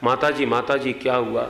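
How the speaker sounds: normal talking voice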